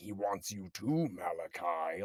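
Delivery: slow, scary voice of a possessed man. Retelling a movie scene where a character becomes possessed: imitating a possessed voice. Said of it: "that voice, when he becomes possessed, he's like".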